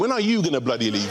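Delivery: plain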